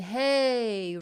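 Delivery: breathy hey, air escaping on the h. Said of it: "This is the breathy onset".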